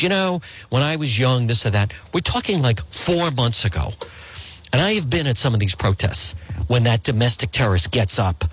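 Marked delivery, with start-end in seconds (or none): none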